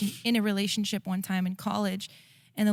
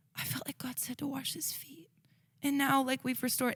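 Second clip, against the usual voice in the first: put-on tearful voice, higher and quieter; 5 semitones higher, 7 dB quieter than usual. Retelling Aaron returning from work and describing making peace: imitating Aaron in tears. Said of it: "comes back in tears saying".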